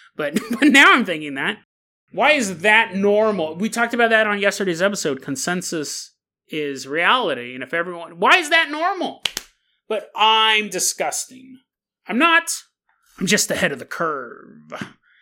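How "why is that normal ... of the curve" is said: comic-book villain voice. Talking on a podcast, doing a Joker impression. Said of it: "You like that Joker impression?".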